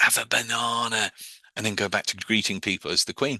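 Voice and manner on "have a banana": committed, best-effort put-on Cockney accent. Retelling a woman breaking from greeting people as the Queen, her best Cockney voice. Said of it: "in her best co- Cockney voice".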